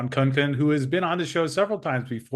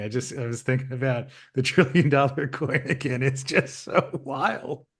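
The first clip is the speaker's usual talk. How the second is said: giggling, laughing through the words. Interrupting the other speaker's coin talk with an apology, giggling. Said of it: "I'm giggling".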